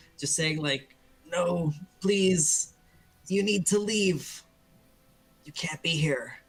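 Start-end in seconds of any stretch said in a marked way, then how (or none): 1.3-6.3 character voice, calling out. Voicing a figure who begs the party to leave: calling out quietly.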